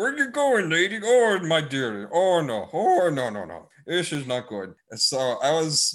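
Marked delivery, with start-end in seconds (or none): 0.0-4.7 goofy put-on Irish accent, much higher. Joking while she was off screen, goofy Irish accent. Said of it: "this like goofy Irish impression".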